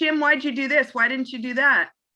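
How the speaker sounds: doubtful, second-guessing, accusing tone. Showing how a reporter might second-guess a coach: second-guessing accusing tone. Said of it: "if I'm second guessing why Jim put".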